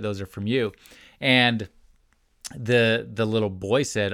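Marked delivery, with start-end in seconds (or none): 0.0-0.7 put-on snide, snarky, pointed tone. Retelling what a mom said to her four-year-old: imitating a snarky remark. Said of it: "in a snarky way".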